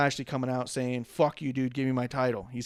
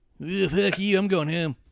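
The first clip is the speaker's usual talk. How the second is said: high, pitched-up cartoon character voice; 5 semitones higher, 4 dB louder than usual. Imitating a wrestler walking out, sounding like a South Park character. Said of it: "You sound more like a South Park character".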